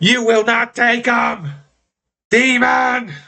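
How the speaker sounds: very high, rage-filled, furious ghostly banshee cry. Voicing a banshee that slams a character into a wall: raging banshee voice. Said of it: "full of red glowing rage".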